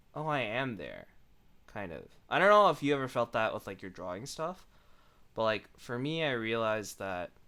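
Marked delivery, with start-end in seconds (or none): none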